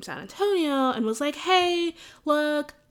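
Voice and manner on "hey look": eager, thrilled, excited, pitched-up call. Recalling phoning their parents about a first author poster, retelling an excited call. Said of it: "when I excitedly called my parents".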